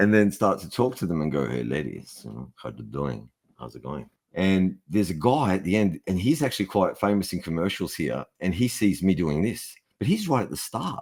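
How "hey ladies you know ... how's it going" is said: creepy, sleazy lounge-lizard tone. Retelling trying to get into character by talking to women: imitating own creepy come-on. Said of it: "decided to be really creepy".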